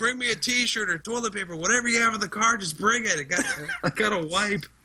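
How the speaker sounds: high-pitched hollering yell. Retelling calling to his wife for toilet paper: imitating own past yelling. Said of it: "so then I'm yelling to my wife".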